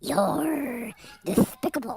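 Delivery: old-school cartoon cat character voice. Calling a baseball game, trying out cartoon voices: Sylvester the Cat voice. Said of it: "How about Sylvester the Cat?".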